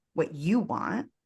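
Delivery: heavy stress on the word you. Talk about knowing what you want, showing emphasis: stress on you. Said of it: "if we put the emphasis on you".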